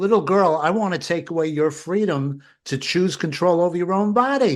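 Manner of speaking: sweet, high, cutesy put-on voice. Parodying someone speaking to a little girl, mocking high cute voice. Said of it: "I'll say it in a high voice and sound cute".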